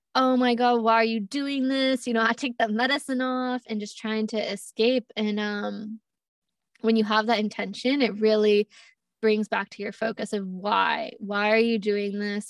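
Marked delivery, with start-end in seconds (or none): 0.1-2.0 crying out, screaming but kept mild. Retelling what the ego screamed during a ceremony: imitating a screaming ego. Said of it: "my ego was screaming at me like".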